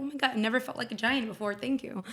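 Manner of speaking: normal talking voice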